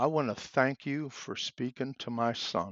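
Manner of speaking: imitated breaking voice. The speaker retells what a man said to him, imitating a broken voice. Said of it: "In a broken voice".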